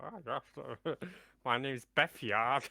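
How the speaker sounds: silly put-on voice, high and slow. Offering to come on the show next week, in a funny put-on voice. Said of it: "just do a f- what funny voice and be like".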